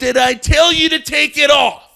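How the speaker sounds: put-on shrill, very high-pitched furious angry shout. Retelling what a man at the airport yelled at another traveler; imitating his yell. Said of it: "This is exact tone".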